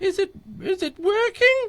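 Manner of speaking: fake lady's voice, very high pitched. Speaker retells asking him whether the recording is working, in a put-on woman voice. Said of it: "I was doing the woman voice".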